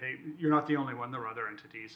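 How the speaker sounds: plain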